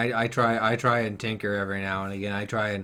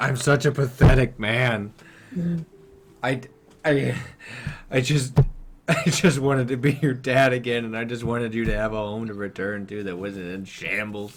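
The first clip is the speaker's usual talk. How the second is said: broken-down weeping voice, sobbing and crying harder; 4 dB louder than usual. Voicing a father begging forgiveness, crying harder in character. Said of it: "he starts crying even more".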